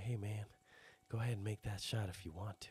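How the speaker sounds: quiet, hushed stage whisper. Imitating a coach on the sidelines: imitating a whispering coach. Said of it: "just whispering shit to his team".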